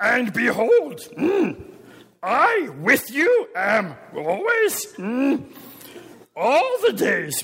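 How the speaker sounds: playful put-on creature voice with pitch swooping widely. Give the literal English of a Greek phrase to a listener, in a Yoda voice. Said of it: "Without the Yoda".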